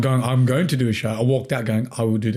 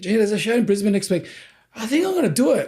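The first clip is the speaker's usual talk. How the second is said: very high, called-out yell; 9 semitones higher than usual. Retelling calling out to someone at the gym: imitating a yell. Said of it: "I yelled out".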